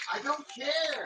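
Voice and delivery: shouting. Answering another speaker, yelling. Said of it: "Who you yelling at".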